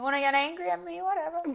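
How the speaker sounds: high, indifferent cat attitude. Voicing a pet cat who doesn't care about trouble: imitating a sassy cat. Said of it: "Tammy is my sassy girl".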